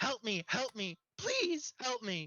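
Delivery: frantic, high, desperate pleading scream. Voicing a madman attacking a ticket taker: screaming for help. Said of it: "he screams out".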